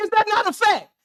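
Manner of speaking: yelling, shouting, hollering. In a back-and-forth argument about stats and production, yelling. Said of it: "Yes, I'm yelling".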